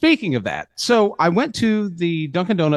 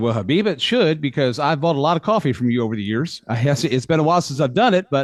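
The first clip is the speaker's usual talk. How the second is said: normal talking voice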